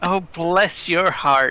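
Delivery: condescending, patronizing, talking-down tone. Speaker shows how they might answer someone, in a condescending tone. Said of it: "in like kind of a condescending tone".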